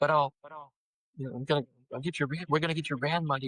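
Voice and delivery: imitated freaked-out, panicked woman's voice. Retelling what a woman said about the van, imitating a freaked-out woman. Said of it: "she's so freaked out".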